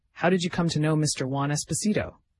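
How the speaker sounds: ordinary delivery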